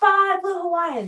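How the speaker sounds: mock demanding yell, very high-pitched. Retelling how a man at the bar kept ordering drinks: imitating a man shouting. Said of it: "he kept shouting".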